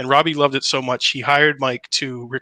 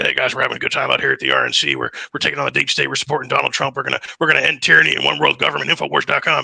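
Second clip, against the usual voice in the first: harsh, rough, creaky voice. Retelling doing his impression for security guys at the RNC: Alex Jones impression. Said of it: "I did my impression for him".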